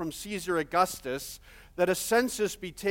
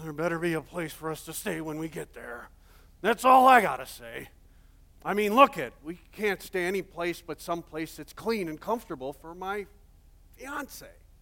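grumbling under one's breath. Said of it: "he's kinda grumbling under his breath".

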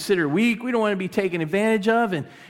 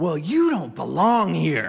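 slow, really harsh, cutting voice; 3 semitones lower than usual. Retelling a lady at the clubhouse pool who spoke up: imitating a really harsh voice. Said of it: "I hear this really harsh voice".

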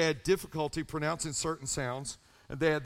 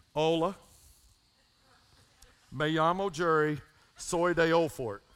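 put-on backwoods Tennessee accent on Spanish. Retelling a first self-introduction in Spanish class: imitating own old backwoods Tennessee accent. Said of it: "this is how I talk then".

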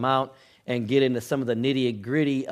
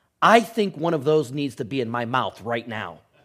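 very serious, earnest, put-on child voice. Retelling what a young child said, asking for a pretzel: imitating Lucas, very serious. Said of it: "he looked really serious".

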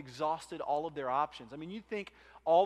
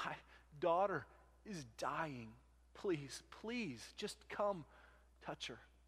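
mock broken, halting, desperate begging tone; 8 dB quieter than usual. Retelling a father's plea at the feet of Jesus, acting out a desperate plea. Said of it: "the desperation in this father's voice".

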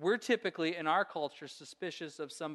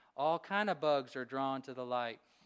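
put-on drawn-out southern accent; 3 semitones lower than usual. Quoting a grandmother's saying: imitating Billy McDaniels' southern drawl. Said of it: "with her southern drawl".

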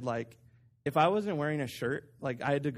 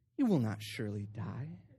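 silky, smooth, persuasive tempter's voice; 4 semitones lower, 4 dB quieter than usual. Reading the serpent's words to the woman: smooth voice. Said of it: "having like a smooth voice here".

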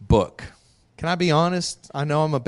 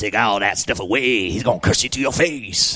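low-pitched Southern devil character voice; 6 semitones lower than usual. Acting out Satan's words in the story of Job, in a Southern devil voice. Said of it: "I'm trying to do my best Southern devil voice".

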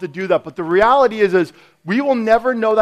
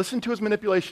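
ordinary delivery

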